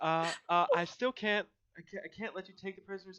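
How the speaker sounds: very loud, breathless, hyperventilating, flustered. Voicing a flustered attendant refusing to release the prisoners: out of breath, flustered. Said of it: "trying to catch her breath".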